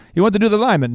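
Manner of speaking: bad, poorly done Trinidadian accent. Retelling a confusing exchange, quoting the other man in a bad Trinidadian accent. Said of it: "I'm probably doing a horrible accent".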